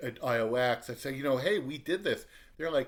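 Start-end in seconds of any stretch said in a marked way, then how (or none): none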